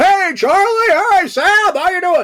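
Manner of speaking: very loud, very high, car-alarm-like shout. You act out how he greeted people coming onto the lot, Anthony Montgomery as human car alarm. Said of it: "the human car alarm".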